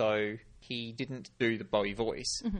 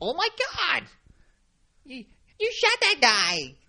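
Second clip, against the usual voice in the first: put-on twangy moll voice, much higher, louder; 9 dB louder than usual. Demonstrating a voice being tried out, gangster girlfriend voice. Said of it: "trying to do a sort of a gangster girlfriend voice".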